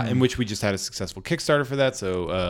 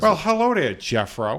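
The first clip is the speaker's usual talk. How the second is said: put-on drunk Massachusetts accent, pitched up; 7 semitones higher than usual. Repeating the drunk man's greeting again: imitating a drunk Massachusetts man. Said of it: "You just did a perfect".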